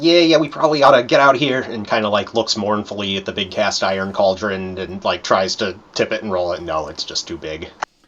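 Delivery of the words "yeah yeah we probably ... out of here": higher, loud, fast, nervous goblin voice. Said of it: "And Scrock goes".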